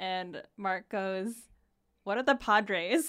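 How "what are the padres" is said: mock-loud, blurted delivery. Retelling how a dinner companion answered the waiter, retelling a really loud question. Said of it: "really loudly".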